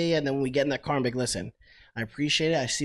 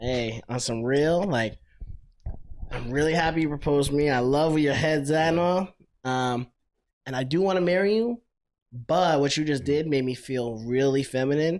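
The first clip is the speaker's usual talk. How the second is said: plain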